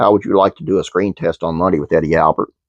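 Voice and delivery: ordinary talk, nothing marked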